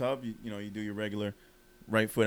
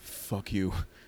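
mock drunken slurred talk; 2 semitones lower than usual. Retelling a man's drunken reply when asked for a cigarette: imitating drunk speech. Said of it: "drunk, says".

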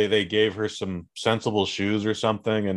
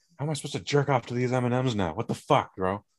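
annoyed, riled-up, indignant put-on voice, growing angrier; 3 semitones higher, 3 dB quieter than usual. Mocking a news host's anger over redesigned candy mascots: Tucker Carlson impersonation. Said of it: "That's my Tucker Carlson impersonation".

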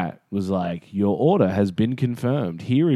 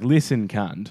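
ordinary delivery

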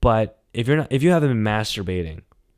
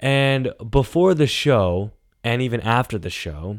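ordinary talk, nothing marked

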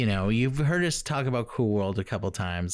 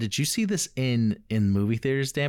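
ordinary delivery

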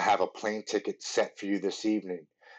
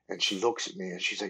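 usual speaking voice

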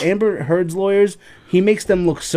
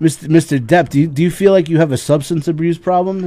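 plain

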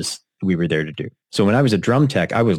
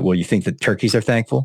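put-on sarcastic delivery. Recalling how he would reply to reminders about holidays, mimicking a sarcastic reply. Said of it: "there'd be a side note of sarcasm".

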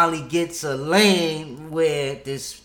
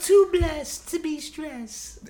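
put-on girly woman's voice, much higher; 12 semitones higher than usual. Asked by a friend to do a lady voice, put-on lady voice. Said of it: "That's a girl voice?".

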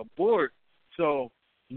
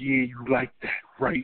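mock whisper, much lower; 5 semitones lower than usual. Retelling what the boy the speaker came with whispered to a man, as a retold whisper. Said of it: "he's whispering to him".

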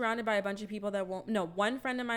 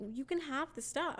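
put-on drunk friendly woman's voice, higher, quieter; 5 semitones higher, 5 dB quieter than usual. Retelling a woman's words: imitating a drunk woman being nice. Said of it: "really drunk, but trying to be nice".

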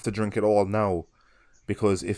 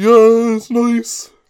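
very high, very loud, mocking sarcastic tone; 12 dB louder than usual. Imagining a reaction to a friend's new haircut: imitating a sarcastic remark. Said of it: "But in a sarcastic way".

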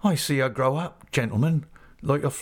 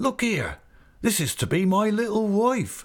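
glad, joyful, high exclaiming cry; 7 semitones higher than usual. The tarpaulin chap, holding the girl's hand, tells her uncle, crying out joyfully. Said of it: "he cries out to me, joyful".

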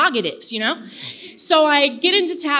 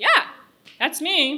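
put-on, mildly irritated, kind of annoyed tone; 4 semitones higher than usual. Retelling meeting someone at a bar who recognized her: retelling own annoyed reply. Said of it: "kind of annoyed".

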